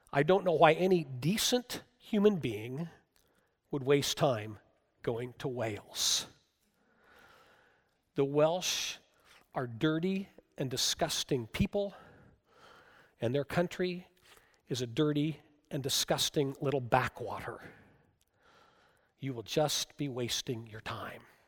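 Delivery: low, matter-of-fact delivery. Retelling what a bed-and-breakfast owner said, quoting him in a matter-of-fact voice. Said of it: "in a very matter of fact voice".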